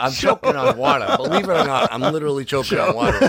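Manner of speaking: high, sputtering laughter, like choking.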